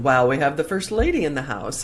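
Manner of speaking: ordinary talk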